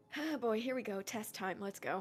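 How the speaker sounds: very quiet muttered aside under the breath. Voicing a character walking past the others: muttering under her breath. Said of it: "Just under her breath".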